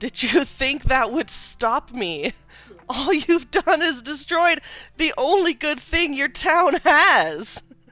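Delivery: very loud, high, gloating villain bellow. Narrating a scene, the speaker voices a character shouting up from a crumbled tower. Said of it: "he just shouts out".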